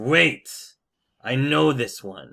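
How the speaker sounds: loud, growling, snarling werewolf voice. Game master voicing a werewolf turning on another werewolf: snarling werewolf. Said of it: "snarls at the at the uh, other werewolf and says".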